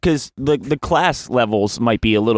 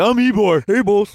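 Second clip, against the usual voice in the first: big burly dumb henchman voice, higher; 10 semitones higher than usual. Playing a big, burly henchman named Ybor: dumb henchman voice. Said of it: "like, a big, burly, like, dumb henchman name".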